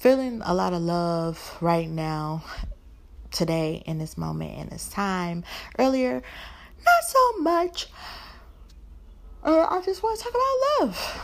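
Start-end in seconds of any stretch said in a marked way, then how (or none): 6.1-11.3 very high voice, words yawned out. Solo host speaking to listeners: yawning while speaking. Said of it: "Sorry, I yawned".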